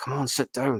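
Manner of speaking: half-muttered grumble under the breath. Retelling a freezing early bus ride: imitating own grumble under breath. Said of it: "grumbled half under my breath".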